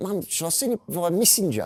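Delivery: put-on high little girl voice, New Zealand accent.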